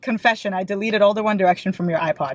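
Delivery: ordinary talk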